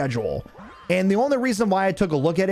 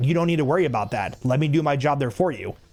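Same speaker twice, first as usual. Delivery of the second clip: imitated snippy attitude, snippy tone; 3 semitones lower than usual. Retelling a coworker's snippy question: imitating a coworker's attitude. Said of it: "She comes with this attitude".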